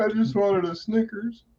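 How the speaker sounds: high, whiny, tearful mock sob, like weepy kid.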